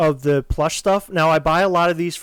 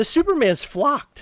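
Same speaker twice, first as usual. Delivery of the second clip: cracked voice, breaking up high; 8 semitones higher than usual. Commenting on a flocked Superman figure, voice cracking. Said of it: "Did your voice just crack?".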